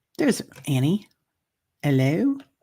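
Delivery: put-on, fake English accent. Speaker greeting someone by name, in a fake English accent. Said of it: "my my fake English accent".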